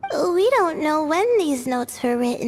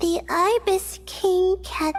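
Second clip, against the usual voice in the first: ordinary talk, nothing marked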